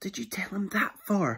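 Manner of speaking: quick, hushed hiss under the breath. Narrator reads Lizzie's line to Max in a dragon story, hissed. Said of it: "Hissed Lizzie".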